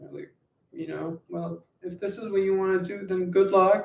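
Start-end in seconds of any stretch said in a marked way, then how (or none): 1.3-3.9 higher, sympathetic, pitying tone. Retelling what people say about wanting to be an artist, imitating a pitying tone. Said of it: "they say it with that tone".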